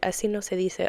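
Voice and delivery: ordinary talk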